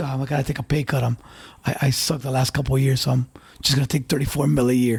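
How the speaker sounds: low, flat, level, dead-serious monotone deadpan. Mocking a player's pay cut, imitating Harden saying it deadpan. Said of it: "the way he say it with a serious face".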